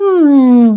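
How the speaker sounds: very high, loud, squeaky water-creature voice. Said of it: "you hear one little squeaky voice going".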